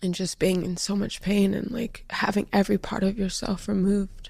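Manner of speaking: words pushed out through tears, crying. Describing having been in so much pain, crying while talking. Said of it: "why I'm crying".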